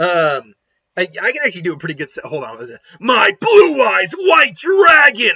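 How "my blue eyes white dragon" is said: very high, loud, drawn-out character voice. Showing off an impression: Seto Kaiba voice. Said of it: "There's my Seto Kaiba impression".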